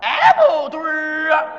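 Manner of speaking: street vendor's calling-out voice. Showing how vendors hawk apple-flavored candied haws: street vendor's hawking cry. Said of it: "这么吆喝".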